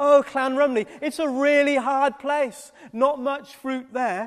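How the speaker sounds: acted, condescending tone full of pity, patronising. Speaker retelling what people said about their Cardiff estate, mimicking a patronising, pitiful tone. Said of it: "said it in a patronising, pitiful kind of way".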